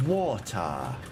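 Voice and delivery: bad, put-on British accent. Asked to say the word water in a really crappy british accent. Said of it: "in the really crappy British accent".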